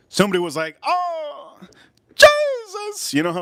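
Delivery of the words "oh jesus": put-on excited woman's cry, very high squeal. Retelling what someone shouted, imitating a woman's excited exclamation. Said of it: "You know how the women do it".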